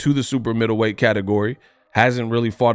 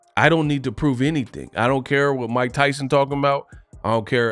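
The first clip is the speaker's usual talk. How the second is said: usual speaking voice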